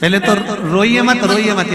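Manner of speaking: high, loud, soothing tone.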